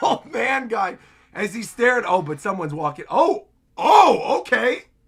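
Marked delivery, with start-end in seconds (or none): 0.0-1.0 put-on playful half-shouted call, mild yell. Reacting to a fight scene, imitating Luffy yelling. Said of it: "He yelling".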